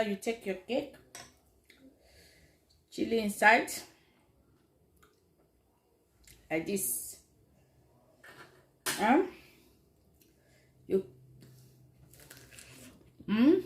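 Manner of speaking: talking with mouth full, chewing. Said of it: "Can you hear my mouth?".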